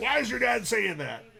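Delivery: put-on raspy old smoker voice. Voicing Mom's imagined reaction to the cursing, put-on old smoker voice for mom. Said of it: "She doesn't sound like an old smoker".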